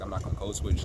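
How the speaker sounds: normal talking voice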